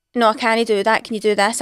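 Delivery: ordinary talk, nothing marked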